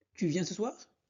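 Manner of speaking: rising, question-like pitch lift on soir. Teaching French questions, the voice rises at the end on soir. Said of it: "on change le ton de la voix en montant à la fin".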